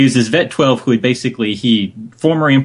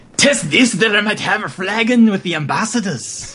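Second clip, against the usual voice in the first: put-on Nordic-sounding accent; 10 semitones higher than usual. Host rereading a viewer's submitted line aloud, in a Nord accent. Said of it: "You have to say it like a Nord".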